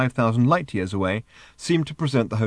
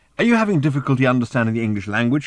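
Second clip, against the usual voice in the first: ordinary delivery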